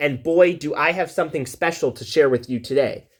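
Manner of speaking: usual speaking voice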